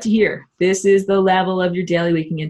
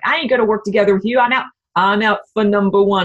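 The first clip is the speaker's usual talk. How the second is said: put-on tough-guy character voice; 2 semitones higher than usual. Speaker voicing reptilians while explaining an idea, tough guy voice. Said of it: "And I use my tough guy voice".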